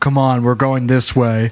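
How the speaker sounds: very butch, manly-sounding put-on voice.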